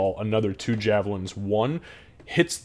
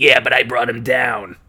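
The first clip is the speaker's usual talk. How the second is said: very loud, cave-dwelling goblin voice; 2 semitones higher, 8 dB louder than usual.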